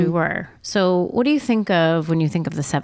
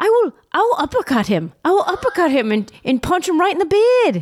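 put-on Australian accent, much higher pitch; 11 semitones higher than usual. Retelling something funny to a podcast co-host, imitating an Australian accent. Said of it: "Very good accent".

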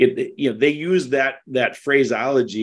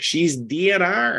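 put-on hollering, called back across a room; 6 semitones higher than usual. Retelling how nurses answered the family's plea, imitating nurses hollering. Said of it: "and hollered back".

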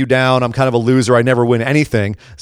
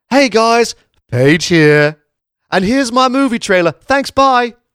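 very high, pitched way up, vlogger-style voice; 10 semitones higher than usual. Retelling a return appearance made just to plug a movie, imitating Paige plugging her movie. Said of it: "went from being like".

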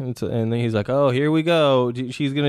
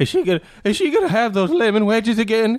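put-on excited middle-aged woman voice, higher; 8 semitones higher than usual. Speaker riffs on a bake-sale scene, imitating an excited middle-aged woman. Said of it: "sounds like an excited middle-aged woman".

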